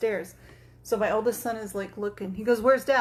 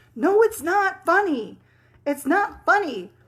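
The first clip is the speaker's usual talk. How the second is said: high, loud, mad, fed-up put-on teenage voice; 8 semitones higher, 6 dB louder than usual. Retelling how her son reacts to being scared: imitating angry son. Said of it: "he gets so mad".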